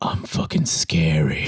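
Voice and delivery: breathy whisper like a horror villain. Imitating what the scary movie villain would say: Candyman voice. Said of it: "He's just like".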